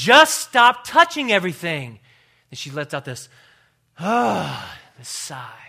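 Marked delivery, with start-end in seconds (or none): 0.0-2.0 very loud, shrill scolding tone, voice raised. Retelling a woman scolding a five-year-old boy in a library, imitating a loud scolding. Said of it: "she raises her voice ... so loud that she says".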